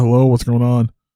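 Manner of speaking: put-on drowsy voice. Retelling a call at eleven at night, speaker acts out the district leader answering: imitating a sleepy voice. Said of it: "you can tell he's like you know real sleepy".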